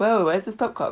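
ordinary talk, nothing marked

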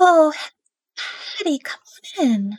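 feeble, weak, very high-pitched voice. Game narrator voicing a character calling hattie into the bedroom, weak voice. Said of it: "You hear a sort of weak voice".

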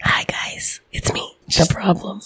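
hushed, hoarse, barely-there near-whisper. Podcast co-host who lost her voice greets listeners, speaking quietly. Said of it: "So quiet".

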